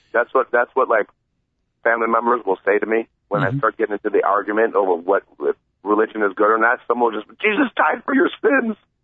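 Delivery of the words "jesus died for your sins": put-on very high, emphatic, preachy insistence. Retelling what family members say in religion arguments, mock-emphatic. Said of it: "they'll say it so emphatically".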